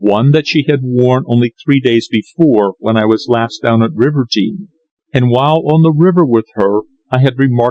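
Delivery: plain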